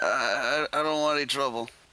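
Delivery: put-on feigned drunkenness. Voicing a character faking drunkenness to a stranger: acting drunk. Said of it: "like I'm drunk or just not, not all there".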